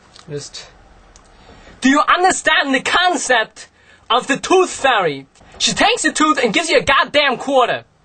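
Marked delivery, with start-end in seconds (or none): 1.8-7.8 very high, over-the-top yell. Showing Christopher Walken yelling in The Rundown: Christopher Walken yelling. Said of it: "he does a lot of yelling in that too".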